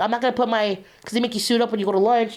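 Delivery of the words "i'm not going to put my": ordinary delivery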